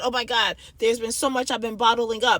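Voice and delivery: normal talking voice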